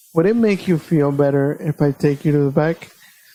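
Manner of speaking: calm, composed, really calm delivery. Retelling what she said to the speaker, imitating her calm voice. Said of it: "and then real calmly again".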